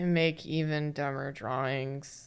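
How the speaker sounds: miserable. Introducing the show alongside co-hosts, sounding miserable. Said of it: "Why do you sound miserable right now?".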